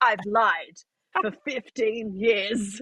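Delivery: put-on Australian accent. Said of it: "talk in an Australian accent and be like".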